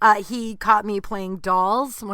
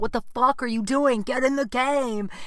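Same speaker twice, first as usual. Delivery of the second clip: put-on high, mild hollering; 5 semitones higher than usual. Retelling a dad and coach on the sidelines: imitating someone screaming. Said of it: "just screaming at me".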